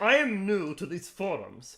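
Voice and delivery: loud, swooping, posh, arrogant upper-class voice. Reading their own old forum post aloud in a posh, arrogant voice. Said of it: "I'll read in the posh, arrogant voice because that's what I was".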